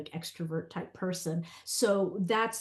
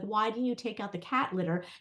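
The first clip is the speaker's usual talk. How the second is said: imitated yelling, higher-pitched; 3 semitones higher than usual. Retelling a complaint to her husband about the cat litter, retelling her own yell. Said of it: "I yell at him".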